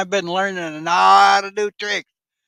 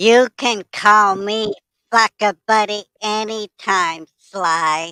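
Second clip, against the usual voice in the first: put-on girly voice, much higher; 2 semitones higher than usual. Performing a bit, speaking in a girly voice. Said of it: "That was me with my girly voice".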